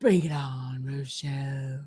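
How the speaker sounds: airy, low breathy delivery. Greeting Rochelle before asking if she likes it, breathy voice. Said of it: "Do you like when I do my real breathy voice?".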